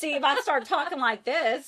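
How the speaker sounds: broad Southern country accent. Talking about going back to Georgia, slipping into a country accent. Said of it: "Did you really talk like that?".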